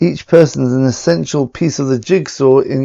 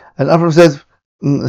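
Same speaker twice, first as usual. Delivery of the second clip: ordinary talk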